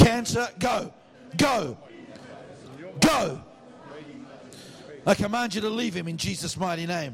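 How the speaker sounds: loud, high, passionate, commanding shout in a fervent preacher voice. Praying aloud for a man with cancer as friends join in: passionate shout. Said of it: "I'm only shouting loud because I'm passionate".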